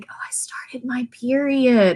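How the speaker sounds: slow, confiding, leaned-in whisper. Retelling how students lean in to tell the teacher: imitating a whisper. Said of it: "lean in and whisper".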